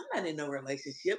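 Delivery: hushed, very low, very soft little voice. Describing how a player talks, imitating his soft little voice. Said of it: "he always talking that little soft voice".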